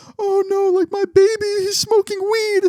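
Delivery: play-acted sobbing through tears, very high and slow. Retelling a mom's reaction to the boys: imitating someone crying. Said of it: "starts crying".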